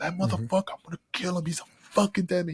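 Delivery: put-on angry cursing. Retelling an angry friend's threats while cursing: imitating someone cursing angrily. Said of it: "he just kept interrupting me because he was talking over me".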